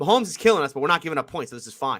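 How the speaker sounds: usual speaking voice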